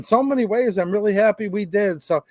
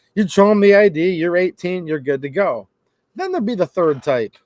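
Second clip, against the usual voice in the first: usual speaking voice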